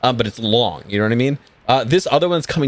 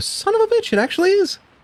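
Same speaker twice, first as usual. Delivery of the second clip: under-breath mutter in a much higher pitch. Narrating a ship captain peering through a periscope, muttered under breath. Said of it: "you hear him under his breath just go".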